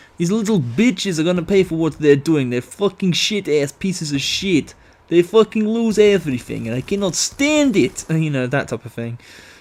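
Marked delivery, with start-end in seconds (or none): 0.2-8.1 angry, put-on Russian accent. Recalling what they used to say all the time: mock-angry Russian accent. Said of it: "an angry Russian at everybody".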